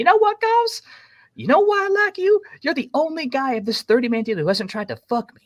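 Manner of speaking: put-on very high, loud southern American accent. Retelling what a woman in the truck said to him, southern accent. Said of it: "she has a southern accent".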